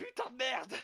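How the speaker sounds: loud, high-pitched yelling. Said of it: "je me mets à gueuler".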